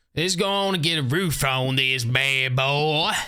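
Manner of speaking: slow, drawn-out Southern cop accent. Building in a game, slipping into an old roleplay voice: Floyd's Southern cop accent. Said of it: "I need to stop with the old accent".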